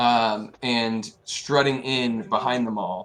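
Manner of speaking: ordinary talk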